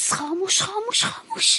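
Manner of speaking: hushed, high-pitched whisper. A woman in a comedy sketch who doesn't want relatives to hear, speaking quietly. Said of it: "چرا آروم حرف میزنی؟".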